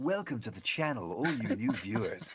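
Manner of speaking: smooth, sultry announcer voice-actor tone. Speaker welcomes new viewers to the channel in a sultry voice. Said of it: "it's my sultry tones".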